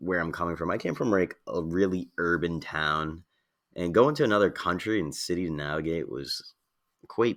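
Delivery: ordinary delivery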